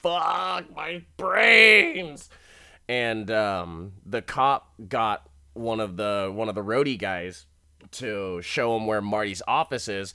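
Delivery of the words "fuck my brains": high, loud, pained scream. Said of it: "doubled over and screaming and stuff".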